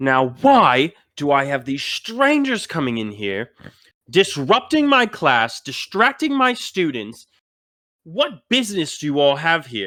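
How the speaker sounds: angry scolding, swooping pitch. Retelling how a teacher silenced the whole class, the speaker imitates the angry teacher. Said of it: "gets visibly um, angry".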